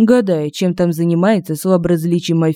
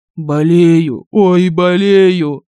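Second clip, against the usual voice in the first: pained drawn moan; 4 dB louder than usual. A counselor answers a vampire's question, groaning. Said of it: "простонал советник".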